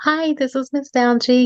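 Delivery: sweet, small, high-pitched little voice. Answering a phone call from a parent in a sweet little voice. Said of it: "in a sweet little voice".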